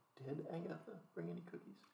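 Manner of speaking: secretive, very hushed whispered aside. A player in character speaks aside to a fellow party member, whispering. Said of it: "Just whispering to one of my".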